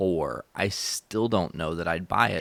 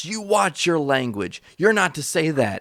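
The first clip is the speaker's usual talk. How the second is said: mock screaming, higher pitch and louder; 9 semitones higher, 6 dB louder than usual. Retelling a dad scolding a kid in his house: imitating someone screaming. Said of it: "starts screaming at him".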